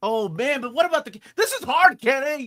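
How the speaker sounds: very high-pitched, loud shout. Ranking characters while talking to Kenny, then yelling. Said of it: "I'm yelling".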